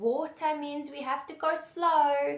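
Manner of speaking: high, slow, kind, positive voice.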